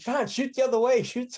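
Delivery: very high-pitched shrill yelling. Retelling spinning on a shared rope during a fight: retelling own yell. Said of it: "I'm yelling at him".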